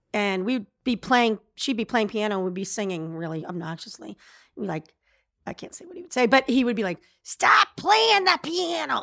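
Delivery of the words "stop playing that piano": put-on high, slow, drawn-out, weird Chicago accent. Imitating a high-school best friend's father telling the kids to stop, weird Chicago-y voice. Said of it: "he had kind of a weird voice, but very Chicago-y".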